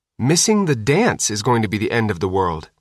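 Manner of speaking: ordinary delivery, nothing marked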